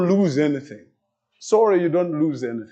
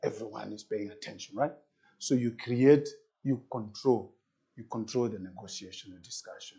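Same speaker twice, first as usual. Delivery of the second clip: deliberately lowered, low, soft, controlled voice; 6 semitones lower, 11 dB quieter than usual. Teaching negotiation, the speaker demonstrates while talking: lowered voice. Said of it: "as I'm lowering".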